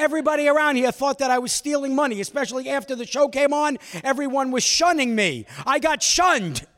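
loud yelling. Retelling how a man yelled at the speaker, imitating someone yelling. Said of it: "And he's yelling at me".

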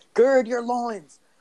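mock very high-pitched, shouted yell. Retelling a classic movie scene line: imitating Stanley Tucci yelling. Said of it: "he's just yelling".

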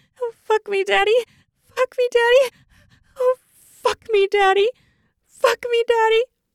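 very high, loud, desperate pleading. Narrator reads a woman begging her lover during sex, desperate. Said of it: "She said with desperation".

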